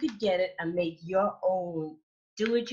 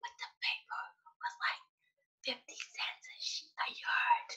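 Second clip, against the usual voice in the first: very quiet, hushed, breathy whisper; 9 dB quieter than usual. Speaker doesn't want everybody to hear; whispering. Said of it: "I'm whispering because I don't want everybody to hear".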